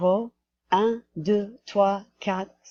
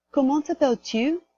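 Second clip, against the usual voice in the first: rising pitch at end of t'appelles-tu; 7 semitones higher than usual. Teaching french question intonation: pitch rises at the end on t'appelles-tu. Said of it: "in the question, your voice goes up at the end like it does in English".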